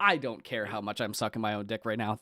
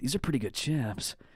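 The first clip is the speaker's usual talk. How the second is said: narration-style narrator voice; 3 semitones higher, 3 dB quieter than usual. Imitating Swamp tasting the chips: Swamp's narration voice.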